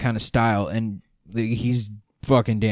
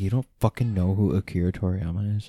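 plain

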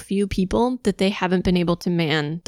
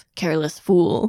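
gruff put-on muttering voice. Retelling a scene where Ramba Ral reacts to a lackey's death: gruff mutter as Ramba Ral. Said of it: "gruffly mutters to himself".

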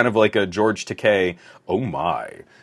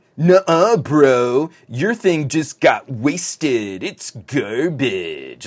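sneering, pitched-up tech-bro voice, drawn-out "bro"; 5 semitones higher than usual. Showing how a sneery tech bro font would sound read aloud, sneery tech bro voice. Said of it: "a sneery tech bro font ... I need that voice".

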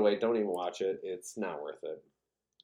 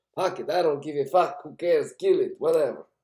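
put-on dismissive, loud, high Greek waiter accent; 8 semitones higher, 7 dB louder than usual. Speaker imitating a greek waiter at their restaurant, greek waiter impression. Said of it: "That's what this Greek waiter at my restaurant sounds like".

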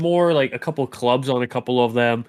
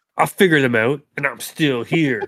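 put-on sassy, mocking tone. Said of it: "saying it with a sassy tone".

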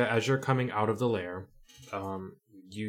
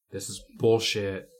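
ordinary talk, nothing marked

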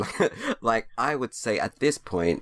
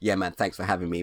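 put-on grudging, ungrateful-sounding tone. Retelling how a podcast guest thanked someone: imitating ungrateful-sounding thanks. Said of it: "never heard a man sound so ungrateful when thanking".

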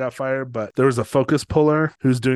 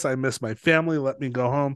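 mock tearful, pleading voice. Retelling how an actor begged to leave a film: imitating someone in tears. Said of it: "in tears".

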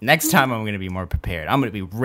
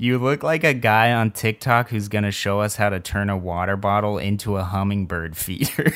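ordinary talk

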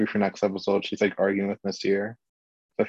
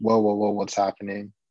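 normal talking voice

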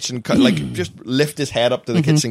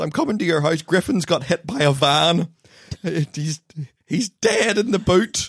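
words broken up by laughter, pitched up; 5 semitones higher than usual. Retelling what a mother said on the phone, laughing through a quote. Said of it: "It's the way you said it like that".

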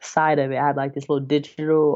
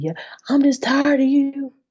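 put-on very high-pitched country accent voice; 12 semitones higher, 4 dB louder than usual.

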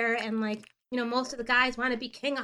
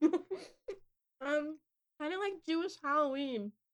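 muffled words pushed around a mouthful of food; 4 semitones higher, 5 dB quieter than usual. Invited onto the mic to explain Purim, talking while chewing. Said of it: "Sorry, I was chewing".

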